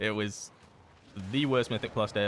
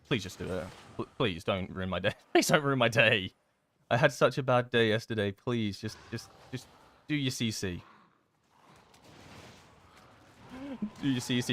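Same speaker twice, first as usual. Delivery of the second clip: wounded, hurt, begging and pleading voice. Speaker asks someone to just do their cc: sounding hurt. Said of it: "Do I sound hurt?".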